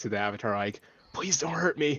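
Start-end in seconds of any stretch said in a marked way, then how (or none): 1.1-2.0 hushed whisper, higher. A player posted up in front of the avatar pleads to it, whispering. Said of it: "Probably just whispering".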